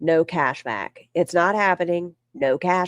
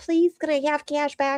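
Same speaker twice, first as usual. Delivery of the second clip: high, sugary-sweet put-on tone; 9 semitones higher than usual. Retelling how she sweet-talked the guy at the cash register: imitating super sweet asking. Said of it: "She tries to like super sweet the guy".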